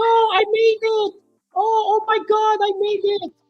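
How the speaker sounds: mock crying sounds. Retelling how she reacted to making it: imitating someone crying. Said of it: "she's all crying".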